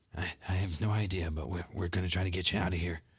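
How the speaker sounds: whispered delivery. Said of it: "I'm whispering".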